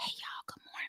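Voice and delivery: breathy, barely voiced, near-silent whisper. Retelling greeting friends one morning while high: imitating own whisper. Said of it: "we can't hear you".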